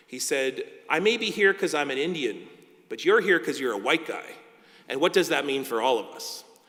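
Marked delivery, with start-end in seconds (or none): 0.9-4.2 play-acted, loud, pointed delivery meant to carry. Retelling a father's words at his first day as judge: imitating someone saying it loudly. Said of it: "he said very loudly, so all the judges could hear".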